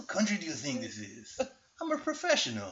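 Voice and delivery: sketchy put-on Latin American movie-guy accent, swooping. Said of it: "I think I can do a good accent".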